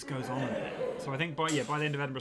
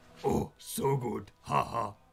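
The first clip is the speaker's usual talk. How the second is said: very slow, drawn-out, creepy puppet voice; 3 semitones lower than usual. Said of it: "it talks like this".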